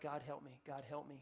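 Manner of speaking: very quiet, low, pleading, under the breath. Retelling sitting alone in a bathroom, saying it really quietly. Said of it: "I just saying really quietly".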